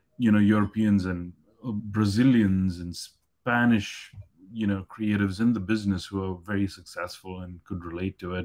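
plain

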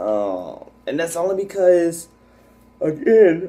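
mid-yawn. Vlogger explains to viewers why the YouTube page went inactive, yawning. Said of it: "excuse me for the yawn".

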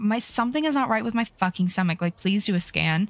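ordinary delivery

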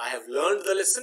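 plain

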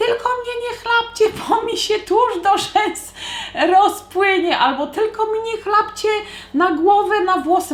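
put-on very high-pitched shouting mother voice. Recounting a mother at the shore shouting to her children in the sea, retelling her shout. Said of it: "no mamusia tylko stała i krzyczała".

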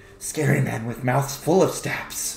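small, little kobold man creature voice. A little kobold man selling stabs responds after being turned down, in a kobold voice. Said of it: "a little kobold man sitting there".

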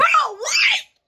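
very high, shrill screamed outburst. A streamer reacts after dying in their first gaming video, screaming. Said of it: "sorry for screaming".

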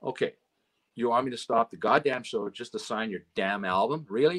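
ordinary delivery

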